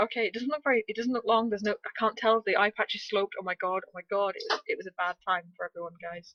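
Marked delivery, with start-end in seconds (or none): none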